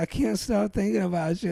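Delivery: mock tearful, weepy, rushed crying delivery. Recalling a guy at work confessing love, the speaker is imitating someone crying. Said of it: "but he'd be crying".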